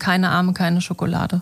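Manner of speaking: ordinary delivery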